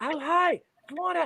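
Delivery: very high trial character voice. Retelling practicing a new voice in the mirror: trying out a Joanna voice. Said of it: "I'm trying to say these voices".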